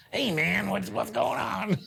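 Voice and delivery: very high, rough, scratchy, creaky voice. Recalling a former drum teacher, imitating Jimmy Faraday's voice. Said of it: "he talks like this, man".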